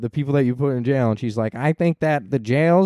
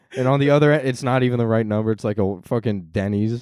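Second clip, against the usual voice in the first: ordinary delivery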